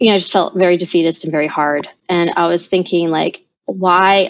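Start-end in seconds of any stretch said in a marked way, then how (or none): none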